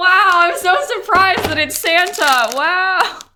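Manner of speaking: very high, loud, slowed, drawn-out wow. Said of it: "sorry if that was loud".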